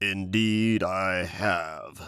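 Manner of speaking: deep, low, growling bear voice. Reading a fable, the bear answers the leopard in a low, deep, growling voice. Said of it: "said the bear in a low, deep, growling voice".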